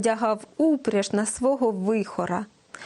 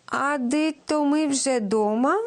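delighted, glad, higher pitch; 4 semitones higher than usual. Reading a tale: the grandmother speaks as the sled ride ends, delighted. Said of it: "зраділа бабуся".

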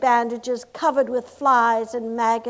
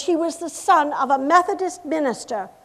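ordinary delivery

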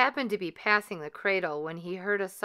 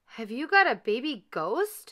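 cried out, exclaiming; 4 semitones higher than usual. Narrator voicing a lady visitor, crying out. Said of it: "The lady cried".

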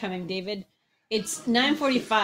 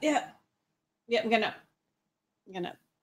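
put-on voice, much slower. Acting out a morning wake-up conversation, answering as David: David impression. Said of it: "Here's my David impression".

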